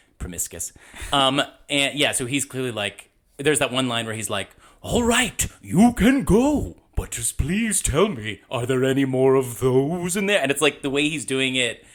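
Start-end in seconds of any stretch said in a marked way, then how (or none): 4.8-10.4 slow, dopey, dragged-out ape-like voice. Quoting the ape king's line from the movie: stupid Proximus impression. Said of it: "I'm doing it stupid right now".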